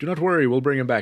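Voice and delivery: ordinary talk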